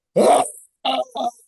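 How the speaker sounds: high-pitched scream at maximum volume, all out. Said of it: "just scream as loud as I could".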